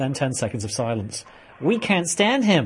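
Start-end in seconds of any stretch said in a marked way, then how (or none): 1.6-2.7 pitched-up put-on American accent. Quoting an older lady who said she is American, in an imitated American accent. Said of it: "Notice the authentic American accent I've developed for that one".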